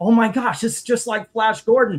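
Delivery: acted-out thrilled, excited, gushing realization. Retelling own reaction while watching a movie: imitating own excited self. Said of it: "I'm sitting here excited talking to Gail going".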